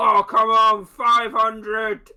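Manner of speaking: loud shouting call. Voicing a crowd member who calls out a higher bet: shouting from the crowd. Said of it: "Floon shout out".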